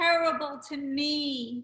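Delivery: put-on childlike voice with the word "me" long and drawn out. Retelling a party moment, imitating Sonia. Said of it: "I always imitate her from that night".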